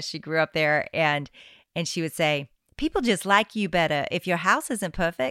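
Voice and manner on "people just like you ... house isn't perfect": put-on Southern South Carolina accent, grandmotherly old woman voice. Quoting a grandmother's saying about an imperfect house: deep Southern accent. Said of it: "She would say it like this 'cause she's from the deep South".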